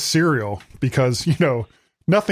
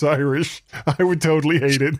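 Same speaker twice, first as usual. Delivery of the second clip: ordinary delivery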